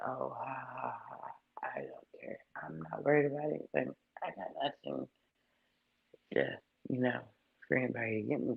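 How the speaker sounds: breezy, fake-carefree, mocking laugh. Imitating someone playing it off as unbothered: mocking a carefree laugh. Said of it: "playing it off like".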